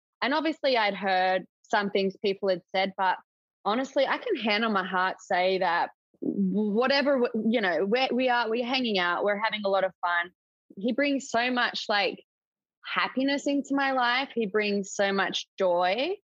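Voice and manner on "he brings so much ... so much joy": choked-up, emotional voice, catching. Speaking about a man who brings them joy; getting emotional. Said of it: "I'm like getting emotional".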